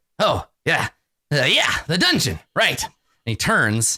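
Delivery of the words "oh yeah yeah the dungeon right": distracted wizard voice, stammering, pitch swooping around. Voicing Halaster interrupted while busy with his aquarium: voicing Halaster. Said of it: "And he's like".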